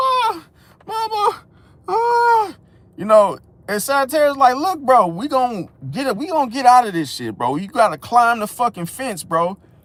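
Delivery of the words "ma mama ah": put-on very high, childish whimpering cry. Retelling being stuck somewhere as a little kid, imitating his childhood crying. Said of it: "I'm crying like".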